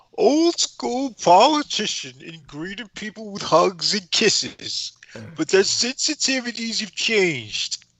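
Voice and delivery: attempted New York accent. A speaker reads a news passage aloud, trying a new york accent. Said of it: "I'm trying to do the New York accent".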